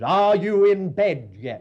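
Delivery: loud, drawn-out, stern shout. Recalling childhood bedtimes, the speaker imitates stern tones shouted up from downstairs. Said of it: "those stern tones".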